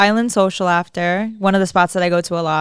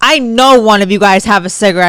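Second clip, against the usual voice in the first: put-on pushy, insistent girl voice, louder; 6 dB louder than usual. Retelling a stranger demanding a cigarette: imitating a pushy, insistent girl. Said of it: "pressing us over a cigarette".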